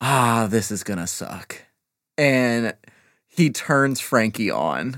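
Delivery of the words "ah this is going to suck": low, tired, resigned, weary sighing groan. Player voicing a banged-up character lying on the floor, with a weary sigh. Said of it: "he just kind of sighs".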